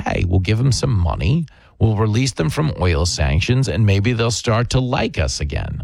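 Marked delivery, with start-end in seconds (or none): none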